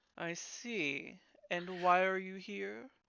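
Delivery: haughty, snooty, condescending tone. Game master voices a figure who treats the party as not belonging: condescending. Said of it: "like you really don't belong here".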